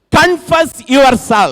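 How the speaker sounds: high, loud, very slow called-out proclaiming voice.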